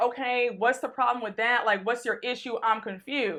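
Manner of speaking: ordinary delivery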